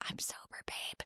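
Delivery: very quiet, confiding whisper. Retelling what a bartender said back after being thanked: imitating a whisper. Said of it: "she whispered to me".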